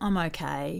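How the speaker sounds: very low, flat, soft glum mutter. Imitating someone asked how they are, in a low tone. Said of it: "in a really low tone".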